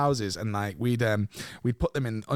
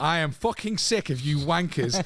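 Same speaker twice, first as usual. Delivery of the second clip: put-on seething, fuming voice, drawn out, pitched up; 5 semitones higher than usual. Retelling a smoke bomb prank, quoting the bus driver: imitating a fuming bus driver. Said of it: "He's fuming".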